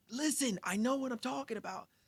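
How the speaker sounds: mock shrill, very high, furious angry shout. Describing a game player the others ignore; retelling an angry yell. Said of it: "he gets more and more angry and he starts to yell".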